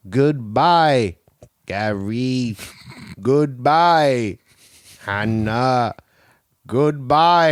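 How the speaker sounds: very slow mechanical droid voice, "Gary" stretched out. Playfully imitating a machine saying farewells to people one by one, as a robot voice. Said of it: "E T the robot voice".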